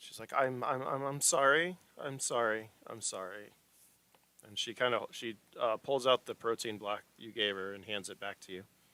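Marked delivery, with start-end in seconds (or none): 0.4-3.5 very slow, tearful stammering, on the verge of tears. Narrating a scene, the speaker voices a girl ordered to apologize to men: tearful apology. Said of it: "tears are kind of starting to form".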